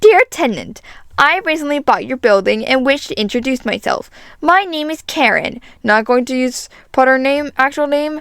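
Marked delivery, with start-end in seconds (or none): 0.0-5.6 irritating, grating put-on lady voice. Reading the new building owner's letter aloud, in an annoying lady voice. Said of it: "I'm gonna give this lady an annoying voice".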